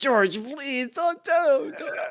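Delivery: mock, very high, loud, desperate begging. Retelling a classroom moment, blocking someone from the teacher: imitating own past begging. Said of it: "I was begging him".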